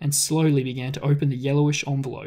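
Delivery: ordinary delivery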